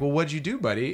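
plain

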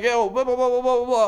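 put-on loud talking. Imitating a comic who talks at full volume during a set: imitating someone talking loudly. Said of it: "trying to talk to you like this".

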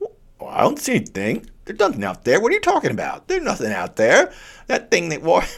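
put-on high, swooping older-man voice, playing dumb. Acting out a reply to someone who questions him, sounding like his uncles. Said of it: "I sound like my own uncles".

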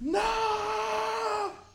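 screamed out, high and loud.

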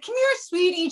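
words pushed past shut teeth. Retelling how a woman whose jaw was wired shut greeted the speaker, imitating talking through teeth. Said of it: "She's talking through her teeth to me".

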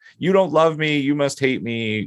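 put-on full-on childish tantrum, high-pitched screaming. Recalling a tantrum over sneakers that were not Jordans, the speaker retells screaming as a child. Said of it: "like screaming".

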